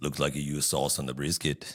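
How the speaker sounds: put-on low-pitched Austrian accent. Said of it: "That was my Austrian".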